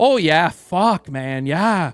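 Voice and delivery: strong local Canadian accent, imitated. Retelling talking with a driver: heavy local Canadian accent. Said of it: "I can lapse into".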